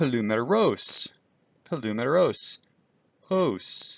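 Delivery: polumeros with circumflex tone, pitch rising then falling. Teacher demonstrating the Greek circumflex accent on a word: pitch rising then falling. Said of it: "kind of up and then down".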